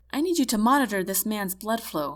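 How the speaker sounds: usual speaking voice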